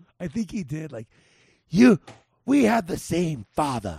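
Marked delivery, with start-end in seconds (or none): 1.7-4.0 put-on bad English accent, louder. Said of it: "he did try to do a bad accent".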